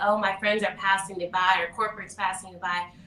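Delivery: ordinary delivery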